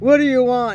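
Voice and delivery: very loud, rough, gruff mannish voice. Retelling answering a stranger, trying to sound like a man: put-on gruff voice. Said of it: "I said that in a really gr- gruff voice".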